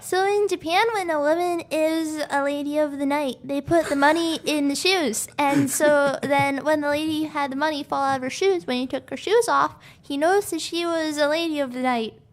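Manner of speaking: put-on high, babyish baby talk voice throughout. Explaining the background of a scene after others ask for it: baby voice. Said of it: "Want me to say it in a baby voice?".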